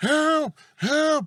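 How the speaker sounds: very high, shrill, repeated yell. Retelling a woman who won't sit down for the nurses, imitating a woman yelling help. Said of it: "she's just yelling".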